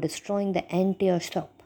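ordinary delivery

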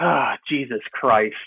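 put-on disgusted exclamation. Retelling what the eight-year-old son said outside: imitating a disgusted exclamation. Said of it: "you just can't say it in, like, disgust like that".

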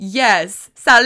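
keen, enthusiastic delivery. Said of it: "And I'm like".

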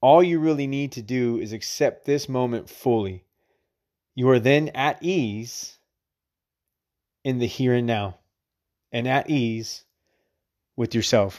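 very slow, deliberate, each phrase drawn out. Reading a passage from The Power of Now aloud, reading slowly. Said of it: "I wanted to read that slow".

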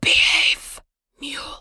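hushed, breathy whispered voice. Narrating a game scene, voicing a mysterious whisper to a horse: whispering voice. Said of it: "you actually hear a whisper".

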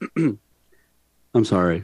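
very low, deep, humble apologetic tone. Demonstrating the apology given when someone comes to cancel a deal, apologetic. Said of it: "my apology goes a little bit like this".

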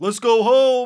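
very high, very loud, shrill blaring call. Retelling the announcer's call at the dunk contest: Kenny Smith catchphrase impression. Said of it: "And then he's like".

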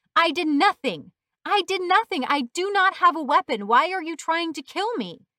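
high, very loud, full-throated yelling. Malik, on the ground with her hands up, yelling at the policeman. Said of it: "while yelling at the policeman".

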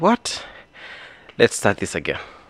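out of breath. Youtuber restarting the intro of a video: out of breath. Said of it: "I'm out of breath".

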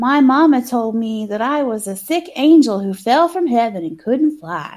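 put-on voice of a very small girl. Retelling a movie scene as a little girl in voiceover: imitating a little girl's accent. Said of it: "Something about the accent you gave".

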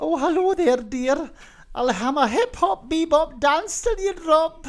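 put-on Scottish accent, very high old woman voice. Improvising as a newly hired Scottish housemaid of about 60; old Scottish housemaid voice. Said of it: "hires a Scottish housemaid that's about 60".

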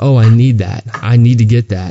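put-on mocking voice. Retelling what the sister said from the doorway: imitating a mocking voice. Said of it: "she was mocking what we were doing".

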